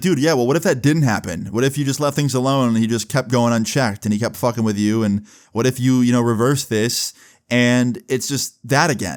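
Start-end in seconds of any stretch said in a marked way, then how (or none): none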